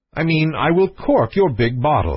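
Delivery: ordinary delivery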